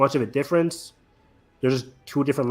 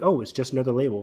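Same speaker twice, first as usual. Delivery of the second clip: ordinary talk, nothing marked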